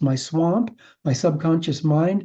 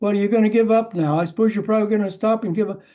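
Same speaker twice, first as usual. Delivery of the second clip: mock needling, egging-on, fast goading jeer; 4 semitones higher than usual. Speaker recounts a man goading them while they struggled for air, mock goading taunt. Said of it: "he was just goading me".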